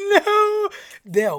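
very loud, very high sobbing, crying wail. Telling how a woman scared of bubbles had to do a task, imitating a woman crying. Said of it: "and she was crying".

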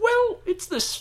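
very high, slow, squeaky voice.

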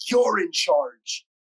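put-on German accent, brief. Retelling a story, the speaker quotes Bonky speaking to a weeping man, in Bonky's German accent. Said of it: "in his German accent".

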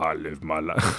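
heavy, deep, low action-star voice. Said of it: "I can't do it without going into Edgar".

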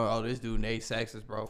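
ordinary delivery

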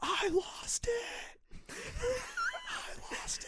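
breathy, hushed scream under the breath. Retelling how a man stood up at two in the morning: imitating a man screaming. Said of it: "Screaming at the top of his lungs".

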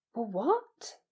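stuttering. A boy, just told he must not go back to school, stammering. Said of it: "Harry stammered".

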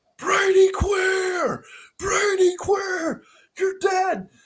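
shrill, very high, top-of-the-lungs scream. Retelling how a guy at a game screamed at Brady Quinn; retelling a scream. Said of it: "this guy is screaming at the top of his lungs".

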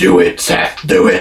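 very slow, drawn-out, rough voice. Imagining what the wrestling boss would say: Vince McMahon impression. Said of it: "I can imagine Vince be like".

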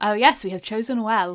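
put-on television advertisement announcer voice. Describing how the tinfoil guys' lines sounded, in a TV advert announcer voice. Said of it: "it sounded like a TV advert announcer".

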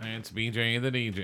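boxing ring announcer voice. Retelling how the boxing host would always announce: imitating Dan announcing. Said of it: "would always like".

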